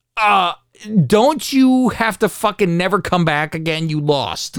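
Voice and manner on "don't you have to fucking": ordinary delivery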